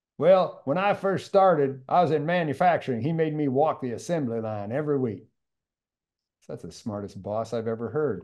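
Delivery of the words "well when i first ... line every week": put-on raised Georgia accent, American South. Retelling what a man in the audience said, in a georgia accent. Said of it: "in a Georgia accent".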